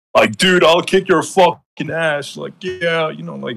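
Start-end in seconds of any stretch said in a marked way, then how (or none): 0.4-2.4 put-on drunk-sounding, aggressive tough-guy voice, Canadian accent. Act out how he talked in a video Sabrina sent, imitating Sin like a drunk Canadian. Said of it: "he was like talking like this".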